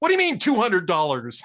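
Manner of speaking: very loud booming voice. Telling a joke, quoting the guy replying to the graduate student; very loud voice. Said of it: "says in a very loud voice".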